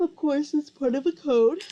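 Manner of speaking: loud speech through a yawn. Explaining the author's hidden code, the speaker keeps talking; yawning while talking. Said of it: "Sorry, I'm yawning".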